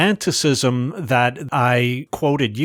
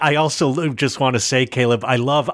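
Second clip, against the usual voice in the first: usual speaking voice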